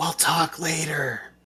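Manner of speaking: subtle, soft stage whisper aside. A player's character subtly tells another character something in front of the circle, half-whispering. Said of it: "just kind of whisper to him".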